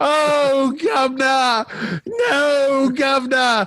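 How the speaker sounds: wailing, sobbing cry, very high and very slow. Describing a rough British film character on a ladder, imitating bellowing and crying. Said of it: "he's like bellowing and crying on the ladder".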